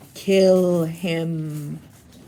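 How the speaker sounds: hissing voice with the word "him" drawn out. Narrator reads the line Harry hears from Riddle: Riddle's hissing voice. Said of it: "Riddle's hissing voice".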